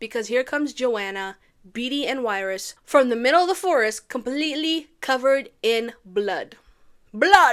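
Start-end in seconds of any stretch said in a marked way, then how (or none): 4.1-7.5 "blood" said with a Jamaican accent. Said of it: "Why do I sound Jamaican when I say blood?".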